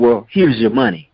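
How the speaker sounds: mock sassy, snippy delivery full of attitude. Retelling how the pizza delivery woman handed over the money: imitating her attitude. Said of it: "with the attitude".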